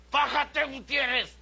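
high, loud yelling. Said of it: "Cuando decía".

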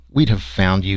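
ordinary delivery

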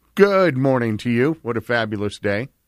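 ordinary talk

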